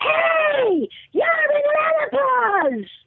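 put-on shouting. Recalling being recognized by a woman in a grocery store, imitating a woman yelling. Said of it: "this woman from the produce section yells".

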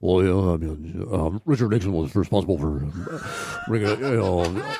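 low, rambling impression voice.

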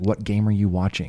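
ordinary talk

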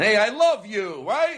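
forceful, pushy, aggressive, slow delivery. Giving listeners their daily dose of love, mock-aggressive. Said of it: "Maybe in a very aggressive fashion".

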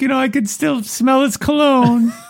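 weeping, crying voice, very high-pitched. Retelling a movie scene where Connie cries in a room: imitating Connie crying. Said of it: "She's crying".

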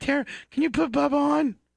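very high, tearful, crying, pleading voice. Retelling a phone call the sister answered: imitating someone crying. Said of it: "and she's crying".

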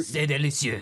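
put-on fancy French accent.

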